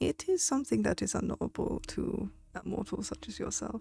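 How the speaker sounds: put-on German-accented delivery. Voicing a horse answering a player's question, redoing it in a German accent. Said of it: "That wasn't his accent. He was German".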